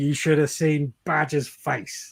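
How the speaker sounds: ordinary talk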